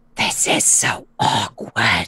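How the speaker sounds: very slow, hushed, drawn-out whisper. Leaning over to another player's character at a dinner table: quiet whisper. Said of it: "I quietly whisper".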